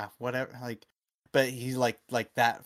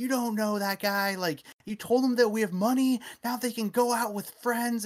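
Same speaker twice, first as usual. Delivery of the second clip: very high, shrill, furious angry yelling; 12 semitones higher, 4 dB louder than usual. Retelling how a pimp in a movie yelled at the boyfriend: imitating someone yelling. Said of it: "yelling at him".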